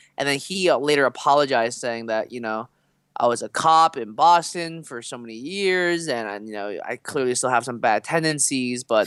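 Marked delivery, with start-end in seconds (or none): none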